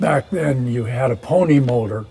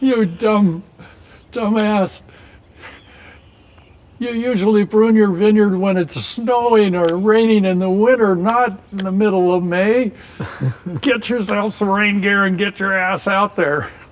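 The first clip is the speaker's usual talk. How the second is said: scolding through laughter, pitched up; 7 semitones higher than usual. Retelling a tutor's scolding about pruning: imitating Jerry laughing while scolding. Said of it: "Jerry was laughing so hard".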